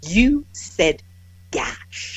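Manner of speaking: put-on precise English accent, every sound clear. Retelling what an English man said to the speaker, crisp English accent. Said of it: "They're English. Enunciated. He goes like this".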